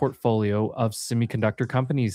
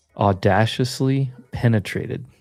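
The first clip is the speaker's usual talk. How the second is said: slowed-down delivery; 4 dB louder than usual. Asked to repeat a quote a little slower, saying it with a slower delivery. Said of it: "say that again, but a little bit slower".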